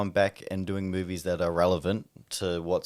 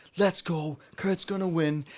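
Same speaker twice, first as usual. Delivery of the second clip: acted, very high rallying crowd-hyping scream; 10 semitones higher than usual. Retelling walking out with a mate before his match: imitating screaming to the audience. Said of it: "I'm screaming to the audience".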